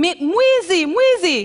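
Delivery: very high, shrill, tearful crying scream. Retelling shouting after a kid rode off on the bike: imitating own screaming. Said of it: "and I start screaming".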